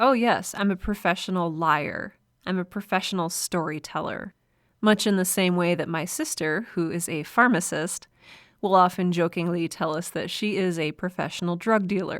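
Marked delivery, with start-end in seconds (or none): none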